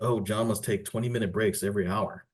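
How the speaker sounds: usual speaking voice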